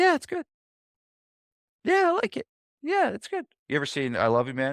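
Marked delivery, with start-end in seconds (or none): 0.0-3.4 voice shooting very high, half-hearted and unconvincing. Describing someone asked about their gym, the speaker imitates a voice going high. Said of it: "their voice goes high".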